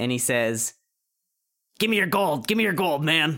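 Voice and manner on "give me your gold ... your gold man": rough, raspy street robber voice. Narrating a game, the speaker voices a hooded mugger holding a knife: raspy mugger voice. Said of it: "he does have a raspy voice like that".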